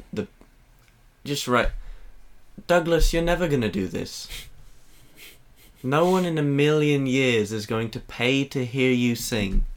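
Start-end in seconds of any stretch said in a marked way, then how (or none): 2.7-9.6 put-on British English accent. Showing a friend a practised British impression: Simon Cowell impression. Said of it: "I was doing Simon Cowell mostly".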